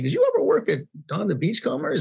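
animated, high-pitched, with big pitch swoops. Retelling asking a bartender a question: Ted Haig impression. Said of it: "in my best impersonation of Ted Haig".

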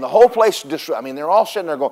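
normal talking voice

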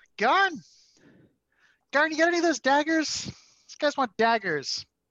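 loud, high holler. Voicing a shopkeeper calling to a smith across the shop: yelling across the shop. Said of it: "at one point she yells over".

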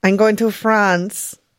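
put-on Pakistani-accented voice. Called on by the host for the next round of a game: Pakistani accent. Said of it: "you're doing a Pakistani accent".

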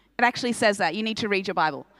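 ordinary talk

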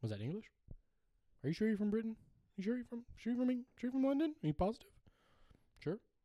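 mock very high-pitched bewildered disbelief. Retelling not understanding a British Tinder date: imitating own confused self. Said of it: "I was like this the whole time".

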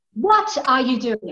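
mock loud yelling. Retelling how Mister Arden yelled at a dancer: imitating someone yelling. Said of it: "starts yelling at this guy".

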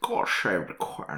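put-on Scottish accent. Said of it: "imagine what it would sound like in his accent".

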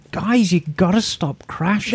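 plain

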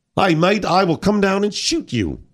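cheery put-on Australian accent, threatening. Asked to, repeating a woman's phone threat in an australian accent. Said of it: "can you do the Australian accent with that one?".

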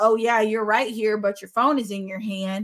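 ordinary delivery

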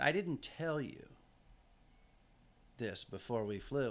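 put-on tearful, crying voice. Retelling what a companion said right after their flight, imitating someone in tears. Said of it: "she's in tears".

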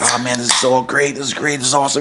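ordinary talk

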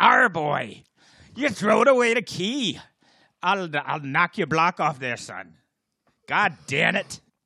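put-on arr-ing pirate, Irish accent. Acting out what the speaker's dad would say, pirate Irish dad voice. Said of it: "My pirate Irish dad would say something like this".

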